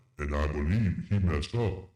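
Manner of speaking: put-on heroic robot-leader commander voice. Commenting on a penalty call in a put-on voice: Optimus Prime voice. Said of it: "my name is Optimus Prime".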